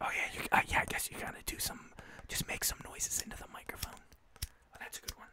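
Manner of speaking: soft, gentle ASMR-style whisper.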